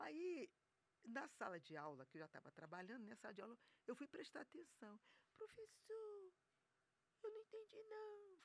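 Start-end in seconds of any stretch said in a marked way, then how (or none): 5.4-8.4 tiny, very high, soft, barely-there voice. Retelling how she asked the teacher in class: imitating own old soft voice. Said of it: "Falava bem baixinho assim".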